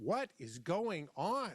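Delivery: very slow, drawn-out yelling. Retelling sitting in a truck after panicking: retelling yelling at himself. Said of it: "I started yelling at myself".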